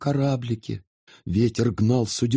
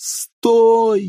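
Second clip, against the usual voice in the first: shrill, drawn-out shout, very high; 9 semitones higher, 7 dB louder than usual. A girl shouts at her brother as he walks off toward the riverbank. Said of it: "закричала она брату".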